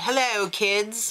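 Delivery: put-on English accent. Recapping a competition episode, voicing a judge: Isaac Mizrahi, English accent. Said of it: "I don't know why I did an English accent for him".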